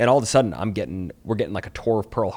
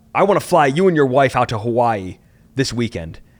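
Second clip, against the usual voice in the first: put-on aggressive voice, higher and louder; 5 semitones higher, 7 dB louder than usual. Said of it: "all aggressive and stuff".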